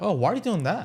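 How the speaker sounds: confused, inquisitive rising voice. Demonstrating a good way to ask someone questions, confused, curious tone. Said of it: "You're asking a confused, curious".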